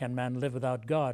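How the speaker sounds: ordinary delivery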